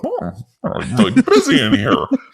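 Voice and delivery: very high, swooping put-on caricature voice. Joking about people walking dogs by a fence, imitating straight people. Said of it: "I love your impression of the straights".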